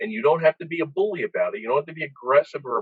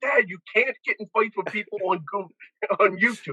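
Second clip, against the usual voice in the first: put-on raised, yelling voice; 8 semitones higher than usual. Retelling what a daughter yelled about fights online: imitating someone yelling. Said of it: "my daughter was yelling".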